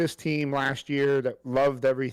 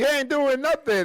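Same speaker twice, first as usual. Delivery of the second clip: put-on, very high, shrill hollered gripe; 12 semitones higher, 4 dB louder than usual. Retelling a teammate yelling at an opponent: imitating someone yelling. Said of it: "he's yelling at Knight".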